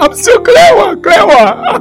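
excitedly shouting. Retelling how a neurosurgeon found the problem: imitating a doctor shouting excitedly. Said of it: "The doctor was actually shouting".

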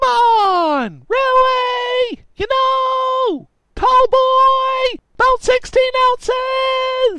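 put-on very high, shrill, long drawn-out drunk screaming. A drunk Tallboy mistakes a computer repair shop for a bar, drunk screaming. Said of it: "This guy was clearly too drunk to realize he had stumbled into a computer repair shop, ... Tallboy screamed".

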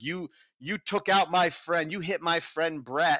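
put-on, high-pitched hollering. Telling of a fan jumping on a man's car, the speaker is imitating a woman yelling. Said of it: "she's yelling at him like".

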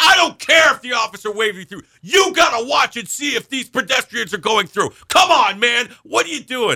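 very high, shrill, put-on scolding yell. Retelling what an officer yelled at the driver; imitating an officer yelling. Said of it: "why are you yelling at me".

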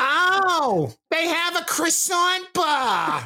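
loud, shrill, very high, drawn-out oh. Imitating a real-life Fran Drescher type for listeners: loud Fran Drescher impression. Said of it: "If you could please lower your voice".

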